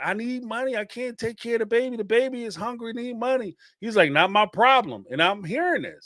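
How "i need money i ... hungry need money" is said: put-on crying, high, tearful begging. Retelling what a crying woman said to a man in a car, imitating her crying, pleading. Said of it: "She's crying, saying".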